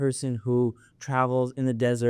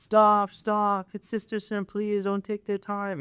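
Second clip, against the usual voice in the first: really loud, over-the-top, exaggerated, pitched up; 9 semitones higher than usual. Retelling stopping brothers who take the sisters' break time: imitating own loud exaggerated call. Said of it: "I'll say it really loudly".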